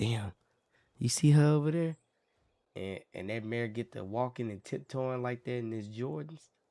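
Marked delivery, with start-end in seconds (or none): 0.0-2.0 put-on whisper, higher. Voicing stallions gossiping about a passing mare: acting out a whisper. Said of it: "they whispered to the horsies".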